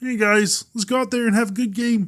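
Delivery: high croaky voice. Showing how a football player talks: Patrick Mahomes impression. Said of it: "Patrick Mahomes talks like this".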